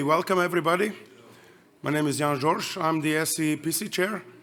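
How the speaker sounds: weak voice, strained and sore-sounding in the throat. The chair welcomes everybody to the meeting, voice hurt by throat inflammation. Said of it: "I apologize for my voice".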